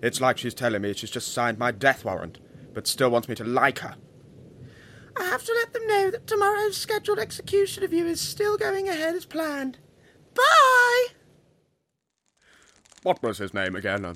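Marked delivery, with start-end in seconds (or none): 5.2-11.1 mocking high-pitched mimicry, higher, louder. Mocking the caller's goodbye after the call ends: imitating a high-pitched goodbye voice. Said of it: "That high-pitched voice when she says goodbye".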